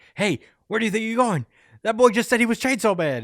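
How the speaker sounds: very high, shrill, insistent, demanding yell. Recapping a Chainsaw Man scene as Asa walks away, retelling Yoru yelling. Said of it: "Just yelling at her".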